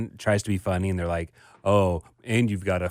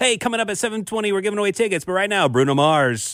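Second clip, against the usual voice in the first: peppy put-on radio DJ voice, much higher; 11 semitones higher than usual. Imitating the other kind of radio host on air, peppy radio DJ voice. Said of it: "they got to have a little bit different voice".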